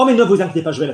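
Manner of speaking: fed-up, irritated, pissed-off tone. Showing a learner how to say a french line: pissed off. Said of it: "Be pissed off".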